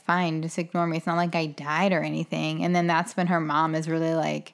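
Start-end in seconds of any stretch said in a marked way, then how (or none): none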